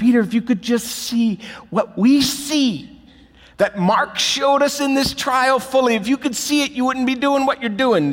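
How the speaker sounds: shouting. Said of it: "You just want to scream out to Peter".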